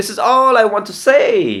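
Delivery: strongest stress on the words all and say. Teaching how to stress keywords in a sentence, stress on all and say. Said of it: "See where I give the stress? All and say".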